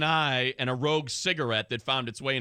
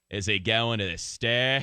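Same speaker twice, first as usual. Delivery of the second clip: put-on Australian accent; 3 semitones lower than usual. Talking about prison slang, one speaker says it in the proper accent: Australian accent. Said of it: "should say it in the proper accent".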